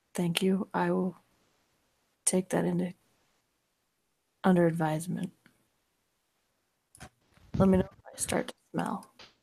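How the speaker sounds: hushed, barely voiced, quiet murmur under the breath. Storyteller voicing a character's reply, quietly under her breath. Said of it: "says quietly under her breath".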